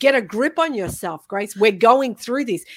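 ordinary delivery

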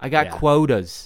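terrible put-on Australian accent. Quoting an Australian whaler dude, in a terrible Australian accent. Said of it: "that's my terrible accent".

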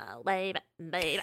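throaty pop-star voice, pushed into the throat. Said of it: "the unique way she's".

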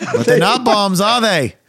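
imitated Australian accent. Retelling Australian airport staff questioning a traveler, imitating an Australian accent. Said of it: "he gets to the Australian airport and they go".

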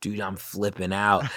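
usual speaking voice

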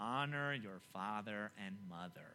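reading each word very slowly and deliberately. Reading verse 12 aloud for your questions, reading very slowly. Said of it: "Let me read very slowly".

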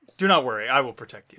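loud, patronizing, head-patting condescending tone. Voicing a character who pats the party on the head: condescending.

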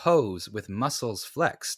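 ordinary delivery

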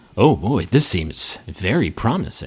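very low, deep, slow, drawn-out stage whisper. Game master voicing a group at a table half-whispering among themselves, group half-whispering. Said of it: "you hear them whispering".

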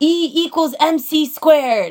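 mock high, very slow, in-your-face yell. Describing a school meme, the speaker acts out a guy mock yelling in your face. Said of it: "this guy yelling in your face".

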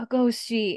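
high stage whisper. Retelling a scene where a character half-whispers: imitating someone half-whispering. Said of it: "he just whispers".

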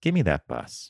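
eerily calm, unnervingly composed, still delivery. Retelling a man's words after a fall: imitating an eerily calm voice. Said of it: "eerily calm".

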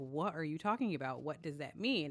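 ordinary talk, nothing marked

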